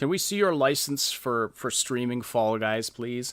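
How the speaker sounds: ordinary delivery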